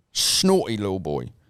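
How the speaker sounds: fake English accent, hammed up. Joking about a newspaper headline with another speaker: put-on english accent. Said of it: "You're doing a bit of English accents".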